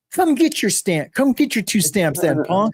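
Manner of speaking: mock riled-up angry tone, pitched high. Retelling what they snapped at the man in the cell over stamps, retelling an angry retort. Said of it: "I was mad, dude".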